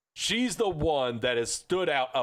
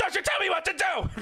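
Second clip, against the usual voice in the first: put-on shrill, very high, rapid Scottish yell. Recounting a clip of Nikki Cross answering Karen: imitating Nikki Cross's fast Scottish yell. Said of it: "yelling as quickly in that Scottish accent as she could".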